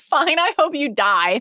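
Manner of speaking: very high, drawn-out, slow angry delivery. Retelling a scene where a character gets mad: imitating an angry retort.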